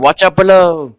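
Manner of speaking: in-character shouting. Warning a party member below while opening a chest: in-character yell. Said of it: "he yells to Frey".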